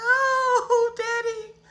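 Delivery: mock high sobbing wail, oh stretched out. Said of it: "so I'm crying".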